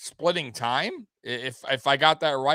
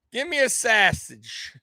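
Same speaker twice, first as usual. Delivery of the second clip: put-on Chicago accent, voice slightly high; 7 semitones higher than usual. Speaker asks someone how he talks like that, then uses a Chicago accent. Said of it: "do you got the Chicago accent?".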